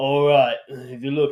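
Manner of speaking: put-on male New York accent. Imitating a man who reads Sesame Street tarot cards, in a deep New York accent. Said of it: "he has like a deep like New York accent".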